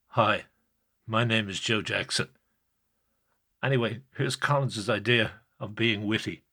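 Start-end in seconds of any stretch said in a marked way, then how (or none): 0.1-2.2 put-on, exaggeratedly grave, overly serious delivery. Showing how another radio host pretended he talked: mock-serious voice. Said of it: "as though I talked like this".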